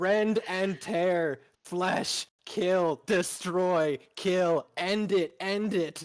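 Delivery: unhinged, loud, high-pitched berserker rage screaming. Voicing an imagined character's response, screaming doom words. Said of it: "he's just screaming fucking like doom shit".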